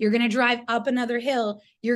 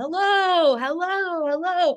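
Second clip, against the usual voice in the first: anxious, loud, high-pitched calling out; 6 semitones higher than usual. Speaker retells walking up a path wanting people to know they're coming, retelling a loud call. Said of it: "I'm trying to be really loud".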